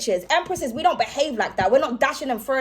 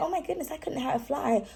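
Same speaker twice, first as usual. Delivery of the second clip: all dainty and delicate put-on voice; 9 dB quieter than usual. Imitating own manner when around people: imitating own delicate manner. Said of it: "just all delicate".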